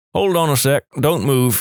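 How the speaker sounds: ordinary delivery, nothing marked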